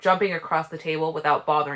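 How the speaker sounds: ordinary delivery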